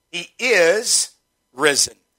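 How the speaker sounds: heavy stress on the word is. Explaining what a statement means by stressing one word: stress on is. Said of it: "the emphasis is on the word is".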